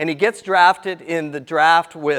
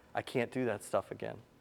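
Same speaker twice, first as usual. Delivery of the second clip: acted, whispered, weepy, breathy, tearful pleading; 6 semitones lower, 18 dB quieter than usual. Retelling how a player reacted to the coach's order: imitating someone crying. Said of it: "just starts crying".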